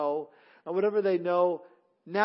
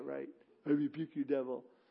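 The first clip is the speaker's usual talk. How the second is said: put-on scoffing devil voice; 4 semitones lower, 8 dB quieter than usual. Speaker acts out the devil laughing at people who rebuke him, devil impersonation. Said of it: "That's my devil impersonation".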